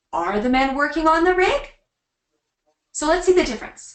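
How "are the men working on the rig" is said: pitch rises at the end on "rig". Intonation lesson, turning the statement into a question: rising pitch on final rig. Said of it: "when you ask a question, your voice goes up".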